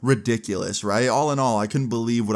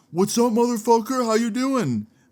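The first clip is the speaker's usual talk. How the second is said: mock, very high, hyped-up, ramped-up delivery; 12 semitones higher than usual. Retelling a friend's greeting on a FaceTime call, imitating Tommy all ramped up. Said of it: "He was all ramped up for no reason".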